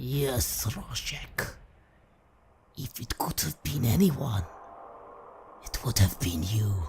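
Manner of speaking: low, crackling, dying whisper. Narrating a game, the dying Count speaks to Rojek: the Count's low crackling dying whisper. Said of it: "he whispers in a low, crackling, dying voice".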